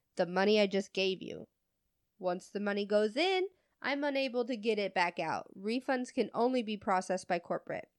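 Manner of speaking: ordinary talk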